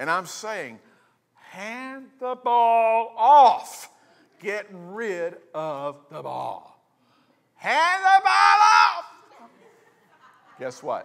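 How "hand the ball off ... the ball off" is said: very high, very loud, slow swooping rising yell. Recounting a football play he watched, the speaker reenacts his yelling: retelling a yell. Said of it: "I'm sitting there and I'm yelling".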